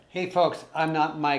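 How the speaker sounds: loud yell into the mic. Greeting the folks watching while away from the mic: yelling into the mic. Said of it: "I'm yelling into Tammy's mic".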